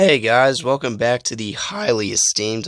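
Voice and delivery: voice cracking. YouTuber opening the channel intro, with a voice crack. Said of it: "that was a terrible voice crack".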